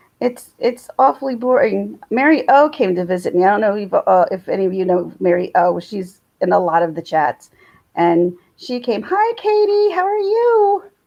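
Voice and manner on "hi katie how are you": very high-pitched, drawn-out, slow. Greeting a chat viewer by name in a very high-pitched voice. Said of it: "Why did my voice just go up so really high".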